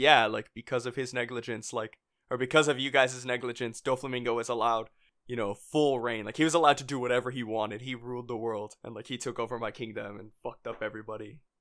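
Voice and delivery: ordinary talk, nothing marked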